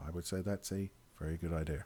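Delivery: voice dropped very deep, low and hushed. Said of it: "now you're talking like this into the microphone".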